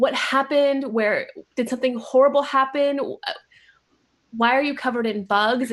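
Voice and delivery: teary voice, tearing up, near crying. Playing a character who finds a friend covered in bugs, tearful. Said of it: "tearing up".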